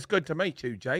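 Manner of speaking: soft, easy put-on British accent. Retelling a british guy coming up to meet jake, imitating a british accent. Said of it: "he comes up and he's like".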